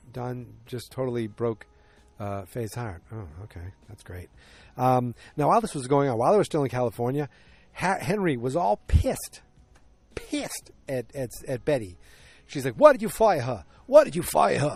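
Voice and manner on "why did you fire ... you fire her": put-on loud, swooping New York accent. Retelling Henry questioning Betty, in a New York accent. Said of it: "I'm trying to do my New York accent".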